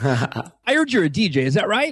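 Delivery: swooping, classic radio announcer voice. Retelling a call from the local radio station manager: imitating a radio voice. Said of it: "he has one of those radio voices".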